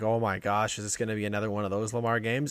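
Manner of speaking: ordinary talk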